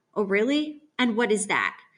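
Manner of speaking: usual speaking voice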